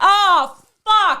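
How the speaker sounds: shrill, loud scream. Telling about someone's reaction to a story post, imitating him screaming. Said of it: "He just starts screaming like".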